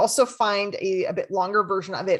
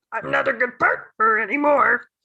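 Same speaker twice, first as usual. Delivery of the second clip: loud put-on cartoon voice; 4 semitones higher, 5 dB louder than usual. Demonstrating hearing a thought in a cartoon voice: Yoda voice. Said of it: "It's my Yoda voice".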